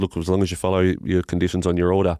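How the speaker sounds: ordinary delivery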